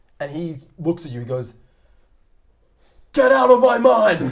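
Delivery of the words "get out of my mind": screamed, much louder, higher, slower. A character screams at someone probing his mind: screaming. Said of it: "you've been screamed at".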